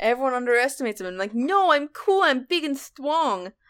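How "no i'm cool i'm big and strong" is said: put-on slow, silly, little baby kitten voice. Voicing a kitten character everyone underestimates, the speaker uses a little baby idiot voice. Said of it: "giving him like a little baby idiot voice".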